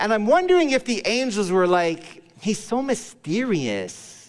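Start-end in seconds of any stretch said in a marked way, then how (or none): 2.4-4.3 put-on Californian high school girl talk. Speaker imagining angels wondering about God's plan, California teen girl voice. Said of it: "I'm talking like a high school girl that's 14 in California".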